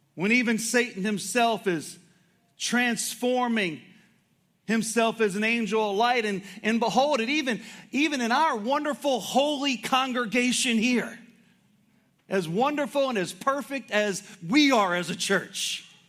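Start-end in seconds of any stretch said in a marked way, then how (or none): 7.9-15.9 dripping sarcasm in a preacher-like tone. Praising the congregation, then admitting it was sarcasm: sarcastic. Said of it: "Everybody knows I'm being sarcastic".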